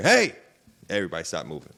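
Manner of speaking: big, loud, thunderous voice. Remembering their dad calling out from his office, imitating a thunderous dad voice. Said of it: "That's that thunderous voice".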